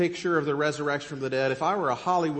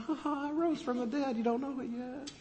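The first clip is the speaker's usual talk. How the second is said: play-acted lighthearted, teasing voice, pitched up; 10 semitones higher, 8 dB quieter than usual. Acting out Jesus teasing the woman at the tomb: imitating playful Jesus. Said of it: "This is so fun".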